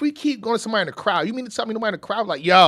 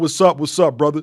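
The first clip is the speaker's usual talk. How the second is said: put-on deep voice, pitched lower; 6 semitones lower than usual. Retelling how the young guest greeted him: imitating a deeper voice. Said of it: "His voice deeper than mine".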